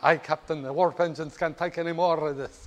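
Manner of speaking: put-on speaking with a Scottish accent. Describing someone in the engine room addressing the captain, scottish accent. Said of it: "speaking in a Scottish accent".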